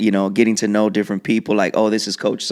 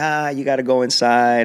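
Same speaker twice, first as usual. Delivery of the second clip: teasing, mocking tone, higher; 3 semitones higher than usual. Retelling how friends teased them about going inside: imitating friends mocking. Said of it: "clowning on us".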